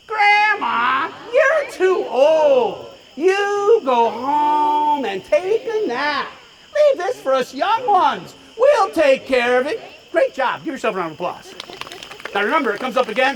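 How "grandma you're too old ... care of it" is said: very slow, dismissive, sassy, drawn out. Leading the audience to say it all together, with attitude. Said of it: "say it with attitude".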